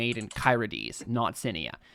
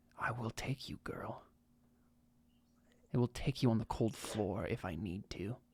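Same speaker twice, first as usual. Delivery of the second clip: very soft voice, quieter; 3 semitones lower, 12 dB quieter than usual. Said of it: "very softly".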